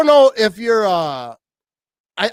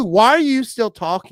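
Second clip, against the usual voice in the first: usual speaking voice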